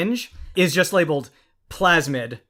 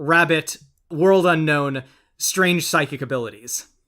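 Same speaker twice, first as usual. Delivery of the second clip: plain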